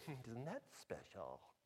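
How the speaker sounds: hushed, soft, condescending tone. Quoting a sitcom character who looks down on everyone: condescending Church Lady voice. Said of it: "she's just kinda looks down at everybody and she says things like".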